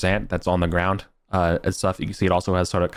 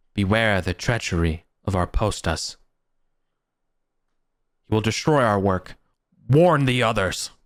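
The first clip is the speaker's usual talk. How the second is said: eerie, ghostly spirit voice seeming to come from all around; 2 semitones higher than usual. A voice heard all around warns the listeners, in a booming voice. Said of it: "it says in a booming voice".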